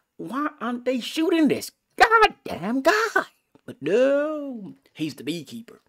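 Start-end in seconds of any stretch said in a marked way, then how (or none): 0.2-3.3 high, loud, exasperated yelling outburst. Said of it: "I'm like".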